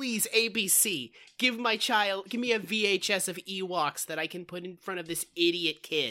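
ordinary delivery

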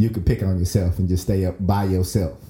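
ordinary delivery

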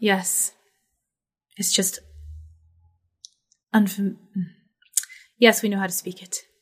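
put-upon, irritated, exasperated elf voice. Voicing an elf who rolls their eyes at the question: eye-rolling annoyed elf. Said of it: "One of them kind of rolls their eyes and is like".

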